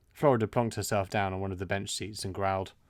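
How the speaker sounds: usual speaking voice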